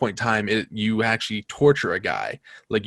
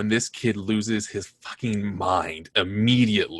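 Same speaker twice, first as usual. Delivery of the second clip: ordinary talk, nothing marked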